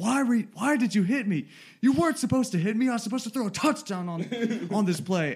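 very high, shrill, put-on raging yell. Recalling throwing the controller down during a football game, retelling an angry yell. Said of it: "I'm just yelling".

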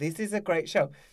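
ordinary talk, nothing marked

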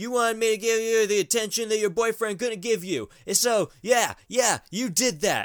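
mock yelling. Retelling how he keeps accusing her: imitating him yelling. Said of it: "he keeps yelling at her".

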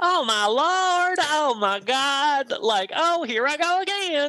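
very high, giggly Southern drawl, laid on thick. Imitating Susan Ward's way of talking, bad Susan Ward Southern accent. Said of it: "Susan Ward has a very thick Southern accent, and she's very bubbly and, like, giggly ... that's a terrible impression".

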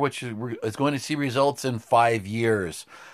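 ordinary talk

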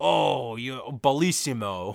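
put-on Italian accent. Describing how a man flatters a handsome man, imitating an Italian man. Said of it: "pat his face like".

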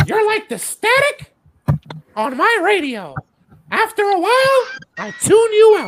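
very high, swooping, sing-song cartoon squeak. Prompted by another speaker to do the next line: Mickey Mouse Clubhouse voice. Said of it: "What is the voice you're using?".

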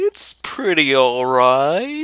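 drawn-out mock voice, sing-song with swinging pitch. Speaker mimics the other speaker's answer to a question, doing an impression of them. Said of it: "that's your impression of me".

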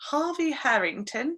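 British pronunciation. Saying a name aloud to fit a theme, British accent on the name. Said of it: "stick with the theme of like the British accent".

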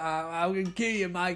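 put-on haunted, threatening ghost fly voice. Retelling a film scene as the fly possessed by the ghost: voice of the ghost-possessed fly. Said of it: "fly is like".

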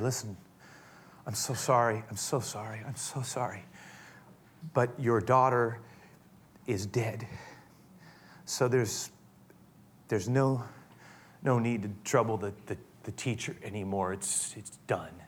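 hushed, close, private half-whisper. Acting out a messenger telling Jairus his daughter is dead: imitating a half-whisper. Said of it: "we can imagine him whispering in his ear".

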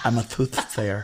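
put-on lisp, deliberately faked. Imagining a soothsayer who has a lisp, put-on lisp. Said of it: "Could you imagine a soothsayer that had a lisp?".

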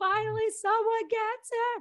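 shrill, very high, loud screaming. Retelling driving through with all the windows down: retelling own past screaming. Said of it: "just screaming, like".

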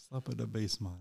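put-on Jamaican accent, soft. Chatting with co-hosts about a movie, the speaker slips into a Jamaican accent. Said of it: "Why do you sound like a Jamaican?".

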